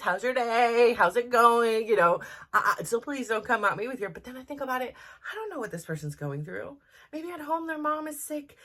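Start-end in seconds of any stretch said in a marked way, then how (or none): 0.0-1.9 very nice, polite, raised, unhurried, friendly voice. Retelling how they greet a phone representative: imitating own nice tone. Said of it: "I'm very nice".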